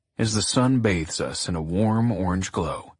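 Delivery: plain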